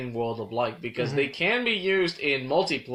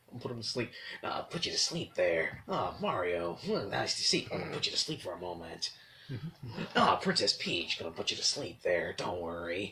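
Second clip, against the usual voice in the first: put-on gruff soldier voice, lower and quieter; 6 semitones lower, 7 dB quieter than usual.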